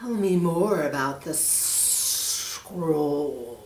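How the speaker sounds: low, hissing snake voice. Reading a story aloud to boys and girls, the snake speaks: hissing snake voice. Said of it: "hissed the snake".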